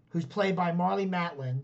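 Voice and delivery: ordinary delivery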